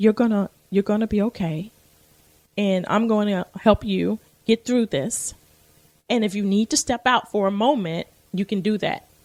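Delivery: put-on gentle, soft voice. Retelling what a young lady said as she hugged you while you cried: soft voice. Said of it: "her soft voice was".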